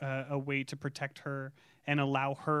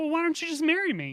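mock begging plea, higher pitched and louder; 14 semitones higher, 6 dB louder than usual. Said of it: "begging him to marry her".

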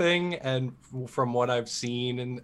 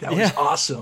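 put-on surfer dude voice, louder; 2 semitones higher, 5 dB louder than usual. Reading out fan messages of praise: imitating surfer dudes. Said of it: "Just surfer dudes".

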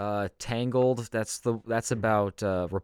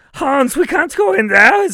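put-on little girl voice, higher, louder; 16 dB louder than usual. Voicing Gretel answering Hansel in a German Hansel and Gretel bit: Gretel voice, little girl in German. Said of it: "how to do a little girl voice in German".

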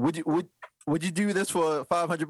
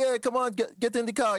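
higher, easy, casual put-on Jamaican accent; 6 semitones higher than usual. Telling a story about people offering a ride, speaker quotes them in a Jamaican accent. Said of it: "He did a Jamaican accent".

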